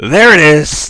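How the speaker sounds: high, loud, excited scream.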